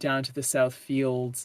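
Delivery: plain reading voice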